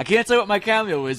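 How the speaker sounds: all excited, high, loud gush.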